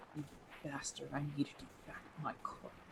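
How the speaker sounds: very quiet muttered whisper under the breath. Kneeling at a grave and tossing dirt in, whispered under breath. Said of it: "I whisper under my breath".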